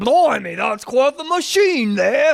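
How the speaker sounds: put-on exaggerated British accent. Retelling a movie scene about a father, stereotypical British accent. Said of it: "very stereotypical British".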